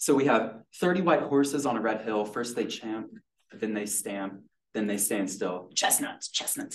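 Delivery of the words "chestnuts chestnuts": hissed words. Reading a character's hissed line from a story; hissed. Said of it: "he hissed".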